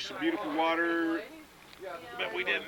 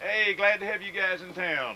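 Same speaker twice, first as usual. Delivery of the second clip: normal talking voice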